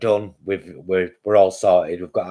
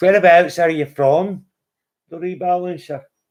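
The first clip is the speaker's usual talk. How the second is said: bad put-on Edinburgh accent, very high; 10 semitones higher, 3 dB louder than usual. Asking the Scottish rebalancer where they're from, in a terrible Edinburgh accent. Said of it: "That is my terrible Edinburgh accent".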